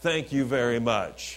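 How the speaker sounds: put-on gratitude laced with snide sarcasm. Retelling what one boy said to his brother at school pickup: mock-sarcastic thank-you. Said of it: "the sarcasm that comes out".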